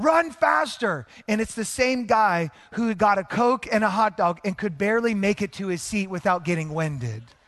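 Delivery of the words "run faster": very high-pitched shout. Retelling what a fan in the stands yells: imitating a fan yelling. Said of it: "someone in the stands yelling".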